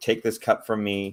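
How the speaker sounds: ordinary talk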